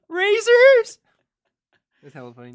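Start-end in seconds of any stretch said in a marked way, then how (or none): 0.2-1.0 put-on teen voice crack, much higher, louder. Retelling asking Dad for razors as an eighth grader, imitating a cracking teen voice. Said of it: "My voice probably cracked".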